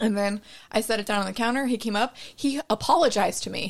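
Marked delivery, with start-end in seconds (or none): none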